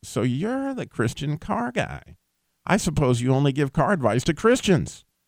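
mock snide, needling, sarcastic tone. Retelling a radio interviewer's opening question: imitating a sarcastic question. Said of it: "very sarcastically".

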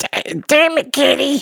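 very high, drawn-out character voice. Offering to be more like the character, then doing it: more Cartman-y voice. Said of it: "a little bit more Cartman-y".

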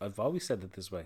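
mock deadpan. Retelling a man's reply when told he finally said it right, mock-deadpan.

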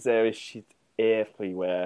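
soft, put-on French accent. Joking about how to write a quote in a French accent, French accent. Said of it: "Is there a font that is French accent?".

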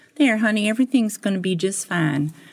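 put-on Southern woman's accent. Retelling what a lady in a lawyer's office said: imitating a Southern woman. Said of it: "she kinda was Southern".

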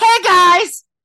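very high, loud screaming promo voice. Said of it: "Jenny would do it".

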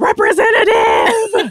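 high, slow, loud screaming. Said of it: "Than screaming".

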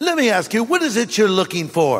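put-on talking bear voice with British accent. Telling a story, voicing the talking bear speaking to a hunter in a british accent. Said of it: "a bear with a British accent".

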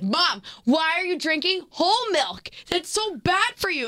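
mock high yell. Back home, speaker retells yelling at their mom; retelling a yell. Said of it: "And then I'm yelling".

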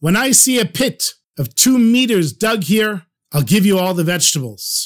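firm, authoritative voice. Retelling a man's words to the hungry Russians, acting out an authoritative voice. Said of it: "says with an authoritative voice".

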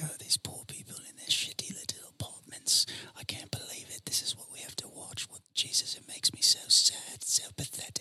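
very quiet, hushed whisper. Imitating someone leaning next to the casting director: imitating someone whispering. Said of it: "lean next to the casting director and whisper".

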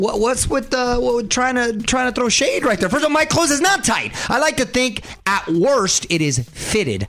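yelling. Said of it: "why are you yelling at him".

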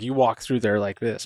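ordinary talk, nothing marked

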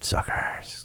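mock mumble under breath. Retelling driving past two new Ridgelines: imitating own mumble under breath. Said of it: "just mumbled 'em under my breath and said".

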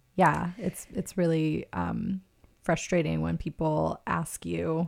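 ordinary talk

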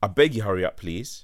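ordinary delivery

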